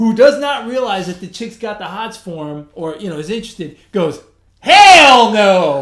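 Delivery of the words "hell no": very loud, blunt yelling outburst. Retelling an answer in a store, imitating Alex yelling loudly. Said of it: "Real loud".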